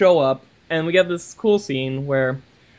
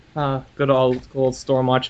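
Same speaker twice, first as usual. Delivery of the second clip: plain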